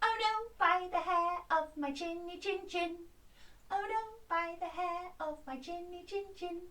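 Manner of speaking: tiny squeaky pig voice. Leading listeners through the wolf and pig story, voicing the little pig: squeaky voice. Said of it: "you need your squeaky voice to go".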